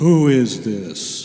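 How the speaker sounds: very loud, big booming voice. Recalling answering the phone as a child, in Vine Deloria Sr.'s booming voice. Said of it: "this big booming voice on the other end".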